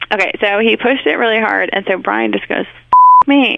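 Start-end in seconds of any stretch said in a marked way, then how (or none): 2.7-3.6 loud, sudden, put-on blurted curse. Retelling how someone cursed after getting hit in the shin: imitating a loud curse. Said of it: "really loud".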